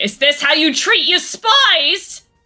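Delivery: yelling in anger. In a role-play, a character yells to anyone within earshot, angry yelling. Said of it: "I'm just like yelling to basically the void".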